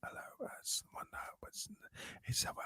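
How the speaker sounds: soft unvoiced whisper. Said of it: "She talks like this".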